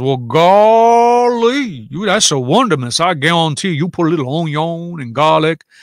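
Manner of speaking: put-on Cajun accent with long drawn-out "golly". Answering a commenter practicing a Cajun accent for a role: Cajun accent. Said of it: "I'm practicing a Cajun accent".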